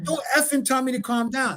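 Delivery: play-acted furious snap, very high-pitched. Acting out a driver snapping back at a cop, mock-angry driver snapping. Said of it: "Now there goes the escalation".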